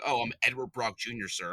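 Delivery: snobby, pretentious, terribly self-important tone. Mocking how an actor kept saying his name: imitating Topher Grace's snobby delivery. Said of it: "the way he was just saying his name".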